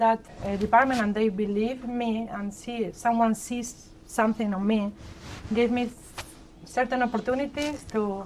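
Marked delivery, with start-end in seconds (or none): none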